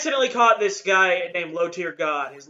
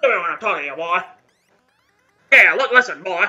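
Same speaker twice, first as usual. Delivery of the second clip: loud, booming cartoon rooster voice; 7 dB louder than usual. Picking the most fun character voice to do, speaker does a Foghorn Leghorn voice. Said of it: "Foghorn fucking Leghorn would be the most fun".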